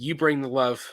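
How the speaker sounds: ordinary talk, nothing marked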